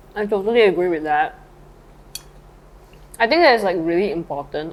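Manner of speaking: talking while chewing, mouth full. Having just stuffed food in their mouth, the speaker is talking with mouth full. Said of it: "I need to stop talking with my mouth full".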